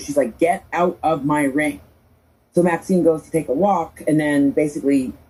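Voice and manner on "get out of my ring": slow, arrogant, lordly, play-acted tone. Retelling what Becky said to Maxine: imitating arrogant Becky. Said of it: "it's a very arrogant thing to do".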